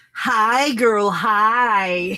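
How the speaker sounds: hi said twice, each stretched long. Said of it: "That's how she says I say it".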